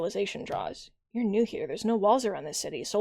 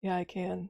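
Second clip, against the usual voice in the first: put-on deeper voice, quieter; 2 semitones lower, 5 dB quieter than usual. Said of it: "a deeper sort of".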